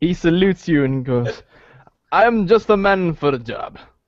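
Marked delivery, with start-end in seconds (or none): 2.1-3.8 put-on Russian accent character voice. Voicing a character who salutes and takes the job: Russian accent. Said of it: "like, Russian accent".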